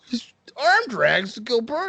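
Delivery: high, slow, drawn-out mock amazement.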